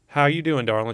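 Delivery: sweet put-on Southern accent. Retelling how a spiritual teacher greeted them: imitating sweet Southern accent. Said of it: "She's a sweet Southern accent".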